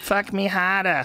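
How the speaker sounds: put-on high Boston accent with R's drawn way out. Mocking how the accent sounds from girls: imitating a Boston accent. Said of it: "It's gross when you hear it out of girls".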